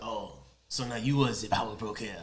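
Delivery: clumsy fake French accent. Recapping a scene, the speaker quotes Batroc showing up, in a bad French accent. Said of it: "That's my that's my French accent".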